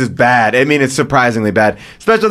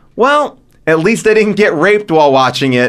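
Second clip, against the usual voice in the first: ordinary talk, nothing marked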